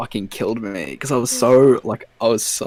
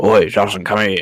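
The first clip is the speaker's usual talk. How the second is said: put-on loose-denture, denture-slipping speech; 3 dB louder than usual. Speaker imitates a man calling him over, loose-denture speech impression. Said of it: "the fucking denture's falling out of his mouth".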